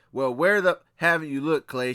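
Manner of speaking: exasperated, scolding, yelling tone. Retelling how a mother yelled at a man who couldn't find her daughter, imitating her yelling. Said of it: "She's yelling at him".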